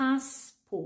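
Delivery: passport, first syllable pass stressed. Contrasting French and English stress in passport: stress on first syllable pass. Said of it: "en anglais, on accentue la première".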